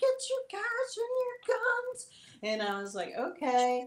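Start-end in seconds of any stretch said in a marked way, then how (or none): 0.0-2.1 really high, squeaky little voice. Retelling what the figures you were seeing told you, really high-pitched voice. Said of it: "with this really high pitched voice".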